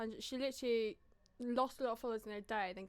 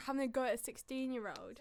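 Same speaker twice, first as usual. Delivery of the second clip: usual speaking voice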